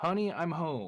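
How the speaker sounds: very feminine-sounding voice. Retelling a voice heard while alone in the house: very feminine voice. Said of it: "in a very feminine voice".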